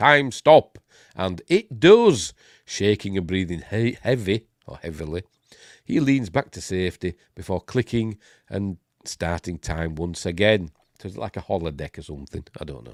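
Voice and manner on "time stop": loud, raised yell. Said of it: "he yells".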